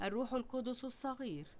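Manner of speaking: very soft, tiny, little mocking voice.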